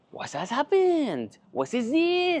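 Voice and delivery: put-on thick French accent, very high and drawn out. Act out Stefan from Belgium looking over as the extraction starts, in Stefan's thick, lovely French accent. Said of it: "thick, lovely French accent".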